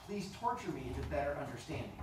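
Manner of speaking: ordinary delivery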